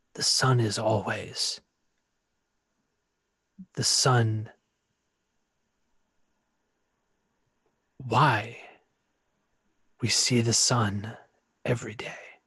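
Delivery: layered, rustling spirit voice like scraping wood. Speaking as Bazakor, close to the mic, a voice like scraping wood. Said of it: "close to the mic to speak as Bazakor".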